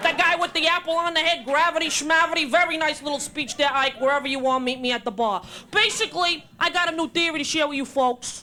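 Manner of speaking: put-on spoken in a Brooklyn accent. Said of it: "if Albert Einstein were from Brooklyn".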